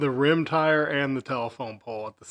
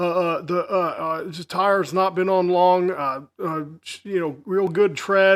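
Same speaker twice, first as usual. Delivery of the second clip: halting, stumbling, faltering, barely fluent English; 4 semitones higher than usual. Retelling how a brother stumbled talking to buyers: imitating halting broken English. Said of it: "could barely speak English to these people".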